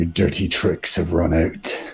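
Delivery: speaking through gritted teeth. Voicing a dwarf confronting an enemy: through gritted teeth. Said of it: "grit through his teeth".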